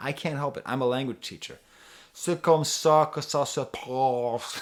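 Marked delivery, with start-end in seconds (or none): 2.1-4.6 Quebecois French accent, slower. A language teacher shows listeners an accent that fascinates them, speaking in a Quebecois accent. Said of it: "this fascinating Quebecois accent".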